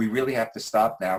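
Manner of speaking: ordinary talk, nothing marked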